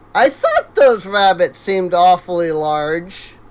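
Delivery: voice cracking. Commenting while playing a game, voice cracking. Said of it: "voice crack".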